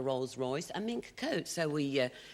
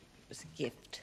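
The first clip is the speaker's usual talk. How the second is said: quiet, mumbled, half-whispered; 7 dB quieter than usual. Answering a question from the witness box in court, mumbling. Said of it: "You're mumbling again".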